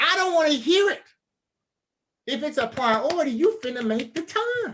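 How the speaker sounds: fed-up, high-pitched shouted telling-off. Speaker addressing people directly, yelling. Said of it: "Sorry for yelling at you".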